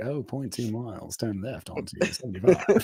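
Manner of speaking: put-on sultry British accent. Imitating her car's GPS voice giving directions, in a sexy British accent. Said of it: "She's got that sexy British accent".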